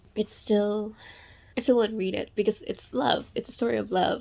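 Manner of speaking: crying through the words, tearful, breaking voice. A reader talking about a love story she loves, crying. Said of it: "I can't believe I'm crying".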